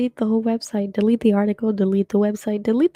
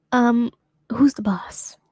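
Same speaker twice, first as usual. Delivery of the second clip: mock slimy, weird-sounding delivery. Retelling how the owner asked the speaker a question, imitating a slimy tone. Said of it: "he said it in a way that was like slimy".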